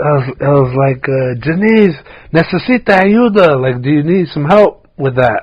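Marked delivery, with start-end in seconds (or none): 1.4-3.6 acted-out loud, high yell. Retelling calling out to a coworker struggling with a pot: retelling a yell across a room. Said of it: "I yelled it across the thing".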